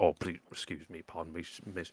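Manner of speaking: awkward, apologetic, stumbling delivery. Voicing guards squeezing past a player on the stairs: awkward apologetic guard voice. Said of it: "kinda awkwardly squeezing past you".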